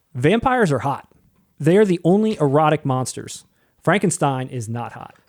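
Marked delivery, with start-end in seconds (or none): none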